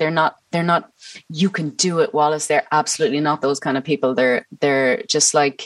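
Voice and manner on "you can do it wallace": ordinary talk, nothing marked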